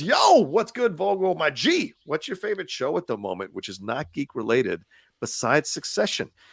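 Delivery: ordinary delivery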